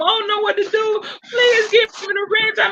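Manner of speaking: tearful, very high-pitched, sobbing voice. Retelling an ex-moderator crying and begging: imitating someone crying. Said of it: "ex-moderator crying, saying".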